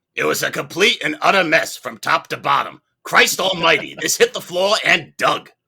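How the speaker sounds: loud, full-voiced belting in a borrowed voice. Quoting a co-writer on a film: Bruce Robinson impression. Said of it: "I'm doing my best Bruce Robinson impression".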